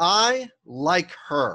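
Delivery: confident, firm, emphatic, fully sure delivery. Delivering a practice line one more time, confident and emphatic. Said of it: "you're sounding emphatic that you do like her".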